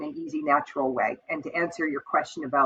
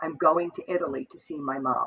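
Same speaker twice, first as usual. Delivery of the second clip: acted, very deadpan, flat and expressionless delivery; 3 dB quieter than usual. Retelling what a client said to an advisor, as a retold deadpan remark. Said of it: "very deadpan".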